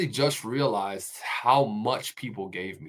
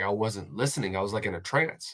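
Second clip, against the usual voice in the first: plain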